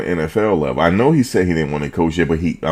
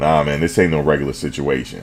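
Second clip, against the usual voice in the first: ordinary talk, nothing marked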